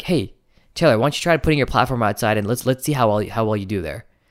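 gentle, guiding, coaching tone.

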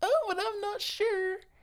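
put-on very high, soft, timid little-boy voice. Teasing the other speaker about hiding scared behind a box, in a mock little boy voice. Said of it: "That's your little boy voice".

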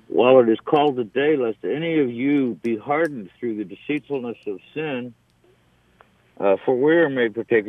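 ordinary talk

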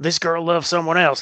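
put-on rural country accent. Explaining how some people think, voicing one of them: redneck accent. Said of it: "I don't know why I went to a redneck accent".

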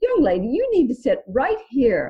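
put-on heavy British accent laid on. Retelling how a seated lady told her where to sit: Deidana's strong British accent. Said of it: "with her strong British accent and said".

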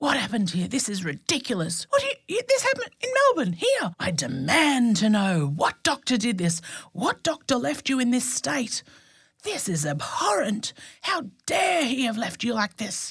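mock furious, outraged, high, swooping screaming rant. Speaker acts out a man's reaction to their ultrasound report, imitating an angry scream. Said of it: "And he was screaming, very angry".

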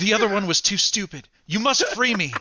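urgent, high, pleading otherworldly voice. A shield starts talking to Race; voice the talking shield. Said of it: ""I am a great celestial being".

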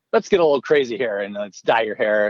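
usual speaking voice

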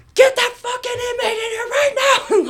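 mock all-out scream, very high pitched. Speaker recounts kicking a chair and screaming at officers, retelling a scream. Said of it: "And I was like screaming".

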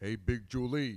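put-on thick Brooklyn accent. Recalling how they delivered their line about big julie, in a thick brooklyn accent. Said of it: "like a really thick Brooklyn accent".

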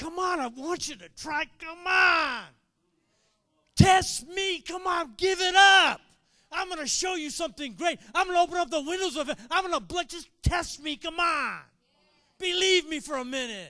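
put-on loud, high, urgent, coaxing pleading. Acting out God's words from the Bible: God pleading urgently. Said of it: "That's the type of pleading".

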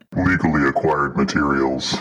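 deep, disguised voice. Making the voice deep like in the crime shows: deep disguised voice. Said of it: "make your voice deep, like in the crime shows".

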